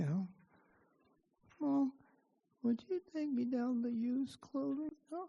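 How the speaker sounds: put-on barely audible, high, hushed nine-year-old mumbling. Retelling a son's mumbled request to his mother: imitating a mumbling nine-year-old. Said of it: "a nine-year-old or so talk like this".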